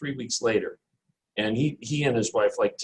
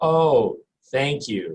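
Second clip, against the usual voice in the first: play-acted, hollow, polite, forced gratitude; 3 semitones higher, 4 dB louder than usual. Retelling his dad's reaction to a gift: imitating a fake-smile thank you. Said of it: "he's got this fake smile on his face like".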